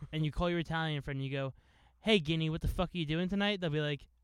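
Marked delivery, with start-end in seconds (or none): none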